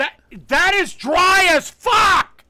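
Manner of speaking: very loud, very high, shrill screaming. Tasting pork that another person cooked and giving a verdict: screaming. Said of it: "you're screaming".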